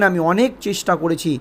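ordinary delivery

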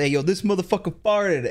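high, hyped-up, crowd-rousing hype-man voice. Describing a man who appears whenever you fart, imitating a hype man. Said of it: "he like hypes up a whole crowd".

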